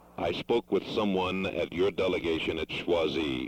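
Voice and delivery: slow, deliberate, slowed-down speech. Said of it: "I will speak more slowly".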